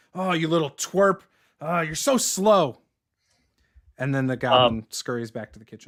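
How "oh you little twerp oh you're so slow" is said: loud, rude, berating tavern-patron holler. Voicing Halid scolding the goblin server: Halid voice. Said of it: "Halid starts saying stuff like".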